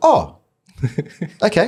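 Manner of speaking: high, swooping, squeaky little voice. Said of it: "it was really high pitched".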